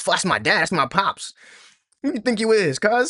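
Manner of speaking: mock proud declaration. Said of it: "He talking with that pride".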